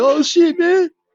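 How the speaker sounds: mock, high-pitched, loud whimpering cry. Retelling guys reacting as a man walked to his trunk: imitating whimpering.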